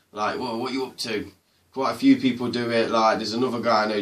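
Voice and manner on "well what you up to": mock Nottingham accent, quieter. Explaining how the bit started, showing it in a mocking Nottingham accent. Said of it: "taking the piss like out of the Nottingham language".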